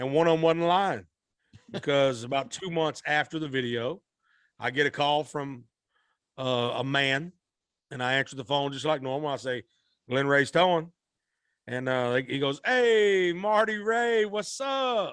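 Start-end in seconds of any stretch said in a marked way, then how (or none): 12.6-15.1 very slow, lively, animated, drawn-out high voice. Retelling a man's greeting on a phone call to a towing business, imitating a very animated voice. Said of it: "very animated voice".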